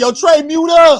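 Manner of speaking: put-on very high, very slow angry bark. Retelling how an angry viewer told Trey to unmute: imitating an angry man. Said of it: "Angry man was bugging".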